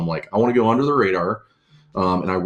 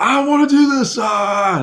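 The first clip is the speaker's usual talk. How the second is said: mock furious, very high, drawn-out, stretched scream; 5 dB louder than usual. Retelling a buddy screaming into the phone: imitating Scotty screaming. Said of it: "screaming at the phone".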